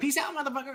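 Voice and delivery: tiny, very high, soft voice, rattled off fast. Showing how the Anzellan's faint line in the episode sounds: imitating the Anzellan, really fast. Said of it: "really fast".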